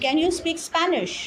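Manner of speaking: normal talking voice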